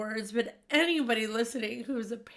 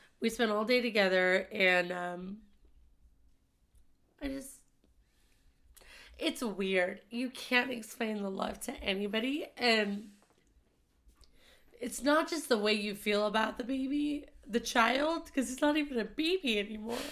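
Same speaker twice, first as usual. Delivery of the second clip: emotional voice full of feeling, stretched-out and. Speaker talking about the child they love: getting emotional. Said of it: "I know I'm getting emotional".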